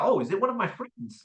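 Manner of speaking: confused, caught-off-guard, puzzled musing. Acting out a prospect's confused reply to an unexpected call: imitating Wilma, a confused prospect. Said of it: "She's gonna be like".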